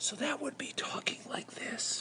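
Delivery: whispered at the very bottom of the voice. Demonstrating the voice level wanted during practice, voice level one, quiet. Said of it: "I want to add a voice scale of one".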